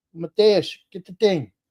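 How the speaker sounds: put-on heavy Portuguese accent. Recalling dad in the garage calling to his son, imitating dad's heavy portuguese accent. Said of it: "he had a heavy Portuguese accent".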